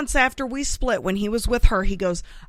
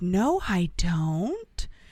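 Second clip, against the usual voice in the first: mock dismissive, condescending, patronizing, drawn-out "don't"; 2 semitones lower, 6 dB quieter than usual. Retelling what a woman said back to the speaker, imitating a patronizing tone. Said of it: "don't patronize me with that tone".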